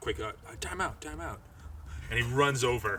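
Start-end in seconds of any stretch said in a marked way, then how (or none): 0.0-1.4 whisper, quieter, higher pitch, faster. Retelling a scene where Frank calls time out, whispering like Frank. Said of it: "you hear him kind of whisper like".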